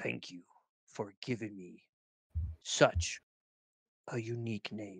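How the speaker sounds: strong, authoritative, commanding, very deep male voice. Voicing a helmet ai thanking a player for its name: strong male authoritative voice. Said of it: "strong, uh, like, male, um, authoritative voice".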